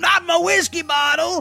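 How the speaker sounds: high, drawn-out, shouted cry.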